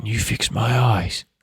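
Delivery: feeble, strengthless voice that doesn't carry. As the listener leans down to hear, he asks the mage, very soft, weak voice. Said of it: "very soft voice, a weak voice that doesn't carry over".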